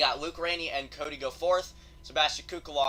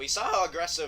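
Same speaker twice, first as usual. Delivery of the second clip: voice breaking mid-word; 3 semitones higher than usual. Commenting on a race, urging racers to be more aggressive, voice cracking. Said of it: "That was a voice crack".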